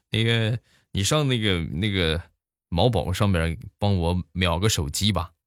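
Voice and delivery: normal talking voice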